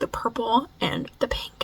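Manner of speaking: soft, unvoiced, wistful, longing whisper.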